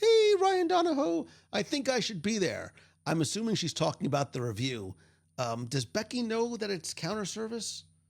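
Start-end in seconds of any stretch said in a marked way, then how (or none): 0.0-2.7 very high, squeaky little puppet voice. Reading out Becky Mencken's message aloud, in her puppet voice. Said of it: "says in her puppet voice".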